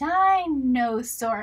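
dinosaur blended and stretched out nice and slow.

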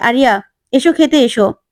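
plain

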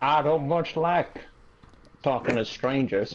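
rural American cowboy drawl. Asked for an American accent, a speaker improvises a line: redneck cowboy accent. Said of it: "Of course you go redneck cowboy immediately".

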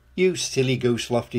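ordinary delivery

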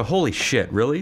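ordinary delivery

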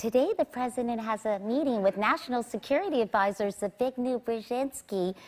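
put-on high-pitched news anchor voice. Retelling getting on the air as a news anchor, high-pitched voice. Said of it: "[High-pitched voice]".

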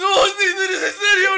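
loud, high-pitched crying shout, in pain.

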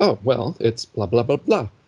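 ordinary talk

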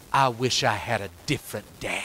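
hushed half-whisper, just loud enough to hear. Retelling a quiet moment in the car, repeating what was said in a half-whisper. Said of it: "And then in a whisper".

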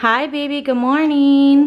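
put-on cooing baby talk, high, slow sing-song.

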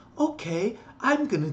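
high, patronizing, condescending talking-down voice. Retelling how you answered a man who talked down to you, mockingly talking down. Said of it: "I talked to him back like that".

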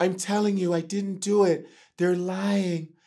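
gentle, soft-spoken, quiet voice. Comedian imitating how Michael talks, in a soft Michael voice. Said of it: "It's because Michael's voice is soft. Because Michael's like this".

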